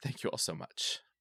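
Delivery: soft, breathy, choked-up voice on the edge of tears. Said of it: "I'm gonna go before I really lose it".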